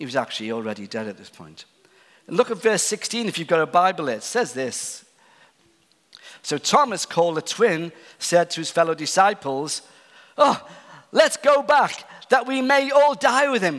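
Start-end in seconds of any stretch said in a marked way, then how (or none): 10.4-13.8 put-on sarcastic voice, higher and louder. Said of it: "You can hear it in his voice".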